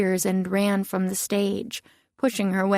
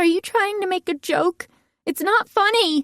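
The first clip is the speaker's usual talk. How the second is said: very high-pitched, indignant outburst; 11 semitones higher than usual. Reading a story aloud, a character objecting to a joke: indignant high-pitched voice. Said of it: "Diana's high-pitched voice rose even higher with indignation".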